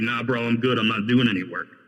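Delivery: ordinary talk, nothing marked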